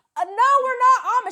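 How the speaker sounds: shrill, very high, very loud shout. Retelling a reply to passersby on the street: imitating own shout. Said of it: "I will shout after them".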